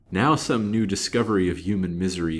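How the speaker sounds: ordinary delivery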